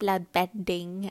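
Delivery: put-on old woman voice. Retelling how an old lady in a show said a word: imitating an old lady voice. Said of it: "she kept saying with her old lady voice".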